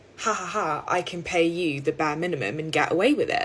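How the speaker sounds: ordinary talk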